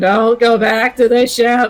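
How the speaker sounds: slow, deliberate borrowed voice, each word drawn out. Describing a player's attempt at an impression, imitating Fox's voice. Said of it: "trying to mimic Fox's voice".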